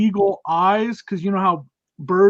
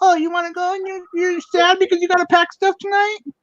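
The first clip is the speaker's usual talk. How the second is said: very high, whiny, teasing mock little-kid voice; 10 semitones higher than usual. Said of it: "she does that impression of me".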